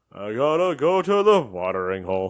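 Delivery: loud, slow, deliberate film-style cowboy drawl. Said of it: "What is a John Wayne impression?".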